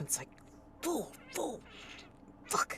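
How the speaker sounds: whispered muttering under the breath. Speaker acting out how a man mutters swears to himself, muttering under his breath. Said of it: "he kind of mutters, like swears to himself".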